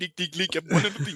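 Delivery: Geordie accent impression. Chatting about Newcastle during a match, doing a Geordie accent impression. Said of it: "my Geordie impression".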